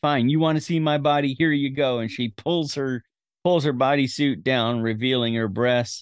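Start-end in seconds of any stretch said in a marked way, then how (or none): 0.0-2.0 put-on fed-up, exasperated, frustrated outburst. Retelling a movie scene where a character strips at a window: imitating frustrated outburst. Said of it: "She finally gets all frustrated and says".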